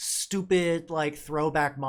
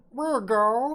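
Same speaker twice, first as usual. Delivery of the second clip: dopey, high-pitched, loud cartoon character voice; 9 semitones higher, 5 dB louder than usual. Speaker mimics the way certain people speak, in a stupid cartoony voice. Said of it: "put on my best like uh, stupid uh, cartoony voice".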